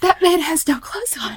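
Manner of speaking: very high, piping, high-pitched cry. Retelling a terrifying encounter, imitating Mary Beth's high-pitched voice. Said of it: "she said it real high pitch".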